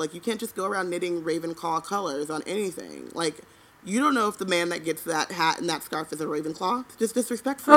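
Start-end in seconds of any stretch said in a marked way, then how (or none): none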